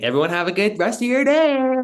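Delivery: put-on shrill, very high, loud Valley Girl yell, rising throughout. Retelling mocking the drink server while driving away, mocking Valley Girl yell. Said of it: "I was kind of yelling out my window".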